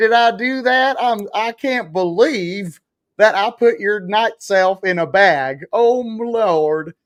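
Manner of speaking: slow, put-on ditzy blonde voice. Joking that they act like a dumb blonde from Orange County: dumb blonde from Orange County voice. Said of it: "I'm the dumb blonde from Orange County".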